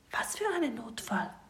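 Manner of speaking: high, hushed whisper. The listener answers a knee-high squid warning of an emergency, whispering back. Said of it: "flüsterst du zurück".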